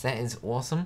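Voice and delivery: ordinary talk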